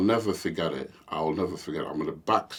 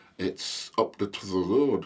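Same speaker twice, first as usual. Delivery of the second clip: put-on Farnworth accent; 4 semitones higher than usual. Retelling a local man giving directions to parents in a car, Farnworth accent. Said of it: "in a Farnworthian accent".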